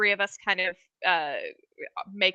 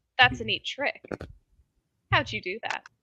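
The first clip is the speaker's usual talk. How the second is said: softly spoken, quiet, guarded, careful voice; 4 semitones higher than usual. Rainier, having shut the door, smiles carefully and asks you, lowered voice. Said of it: "carefully smiles and lowers his voice and he says".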